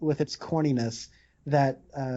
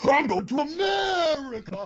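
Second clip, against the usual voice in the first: over-the-top Italian accent, very high, swooping; 12 semitones higher than usual. Imagining how he would have talked, in a ridiculous italian accent. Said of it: "a ridiculous Italian accent".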